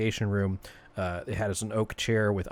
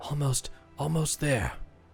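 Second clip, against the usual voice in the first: breathless, winded, pitched-up panting voice; 6 semitones higher than usual. Speaking as Leif answering the group's attempt to reach him, out of breath. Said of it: "he sounds out of breath".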